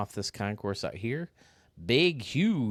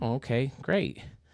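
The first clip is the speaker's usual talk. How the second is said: usual speaking voice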